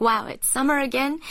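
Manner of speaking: plain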